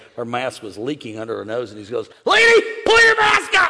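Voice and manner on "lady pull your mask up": very high, loud, shrill barked yell. Retelling a salesman yelling at a woman from thirty feet away, retelling a man yelling. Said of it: "he's yelling at Nicole".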